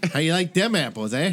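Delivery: put-on high Boston accent. Acting out a man's lines in a Boston accent. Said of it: "listen to him with a Boston accent".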